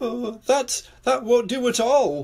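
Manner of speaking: worried, high and slow. A narrator reads a character answering a woman who lost her christmas tree: worried. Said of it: "worried Mr. Worry".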